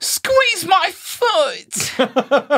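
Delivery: put-on very high, sing-song, English-accented toy voice. A parent imitating the daughter's talking toy dog, English-accented toy voice. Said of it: "they get localized with an English accent".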